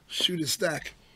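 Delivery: low-toned, hushed voice. Retelling how a man turned away from the mirror to tell her this, retelling a low-toned aside. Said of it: "said it in a low enough tone".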